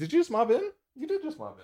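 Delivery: high, soft puppy talk voice.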